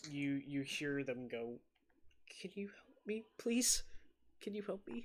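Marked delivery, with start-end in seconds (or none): 2.4-5.1 put-on high, quick, hurried small girl's voice. During a tabletop game, a voice calls out asking for help, little girl's voice. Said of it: "you hear this little girl's voice".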